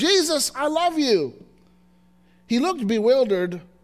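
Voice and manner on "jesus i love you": put-on loud, expressive call, much higher, slower. Retelling how a little boy looked at his chest and called out: loud, expressive call. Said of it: "in a loud, expressive voice and called out".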